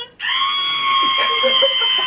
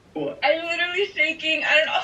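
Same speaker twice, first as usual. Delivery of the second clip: tearful voice, about to cry; 4 dB quieter than usual. Told they are coming to LA for a campaign, the speaker reacts: on the verge of tears. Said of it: "Oh no, don't cry!".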